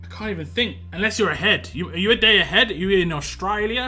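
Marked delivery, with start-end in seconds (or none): 2.7-3.9 homemade, put-on Australian accent. Joking during an early-morning chat: put-on Australian accent. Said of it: "That's my Australian accent".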